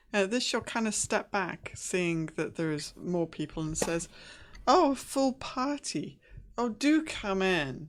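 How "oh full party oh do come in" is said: heavily sarcastic, very slow, swooping and loud. Voicing a character greeting a full party at the door: dripping with sarcasm. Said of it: "dripping with kind of sarcasm".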